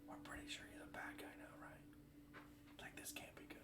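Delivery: very quiet, hushed whisper. Speaking in character outside a house while the suspect is inside: whispering. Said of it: "I'm gonna actually whisper now".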